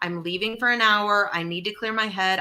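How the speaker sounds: ordinary delivery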